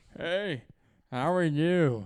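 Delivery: put-on drunk voice. Describing a drunk fan at a ballgame, imitating a drunk person. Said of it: "That's my drunk impersonation".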